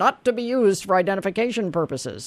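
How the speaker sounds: normal talking voice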